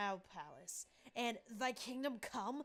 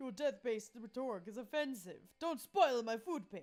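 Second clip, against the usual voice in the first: aloof hipster vampire voice, above it all. In a game, the vampire answers the Slayer's attack: Liam de Lioncourt vampire voice. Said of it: "A hipster vampire whose standoffish demeanor hid that he was truly a lovable dork. / Liam de Lioncourt, 400 and something years. A hipster vampire whose standoffish demeanor hid that he was truly a lo".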